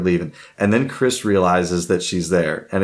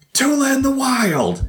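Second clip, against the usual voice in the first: mock scream, very high, wild and drawn out. Retelling a stranger in a Disney World line screaming at a wife, imitating a woman screaming. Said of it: "some woman screams at my wife".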